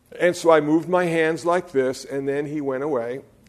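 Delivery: ordinary talk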